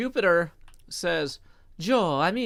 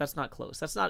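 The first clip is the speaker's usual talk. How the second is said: ordinary delivery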